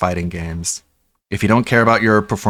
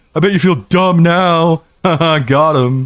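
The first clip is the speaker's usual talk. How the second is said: mocking loud, high put-on dumb-guy voice; 9 semitones higher, 5 dB louder than usual. Mocking the other person's argument back at them, in a dumb guy voice. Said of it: "but I'm gonna do it in a dumb guy voice".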